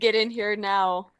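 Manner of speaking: very urgent, pressing, demanding tone. Voicing a message calling the others inside: very urgent sounding. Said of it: "it's very urgent sounding".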